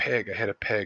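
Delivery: hushed half-whisper under the breath. Retelling answering police officers what was hit: imitating own past half-whisper. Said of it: "just whispered".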